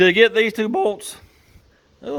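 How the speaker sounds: cracking voice. Explaining a repair while working on two bolts, voice cracking. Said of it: "My voice is cracking".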